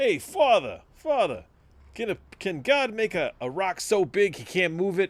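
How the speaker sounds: put-on laid-on New York accent, very high, slow, drawn out. Quoting a comedian's bit about asking a priest: George Carlin New York voice. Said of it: "in that real, like, New York voice".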